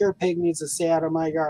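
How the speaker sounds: put-on irate, cranky screaming. Retelling a neighbor's angry phone call: imitating a neighbor screaming. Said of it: "he called and was screaming at me".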